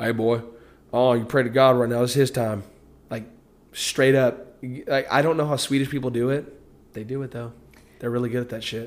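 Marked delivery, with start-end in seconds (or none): 0.0-2.6 put-on strong Southern accent. Quoting a movie role as the actor played it, in a southern accent. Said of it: "Straight ass southern accent".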